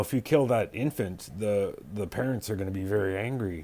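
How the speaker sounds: ordinary delivery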